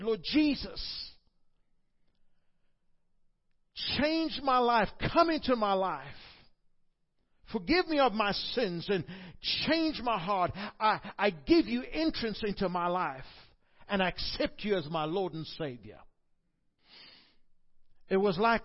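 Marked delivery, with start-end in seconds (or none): 0.0-16.0 acted-out loud scream. Giving a testimony, retelling a prayer made at age ten: retelling a loud scream. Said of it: "I screamed with the loudest voice and I said".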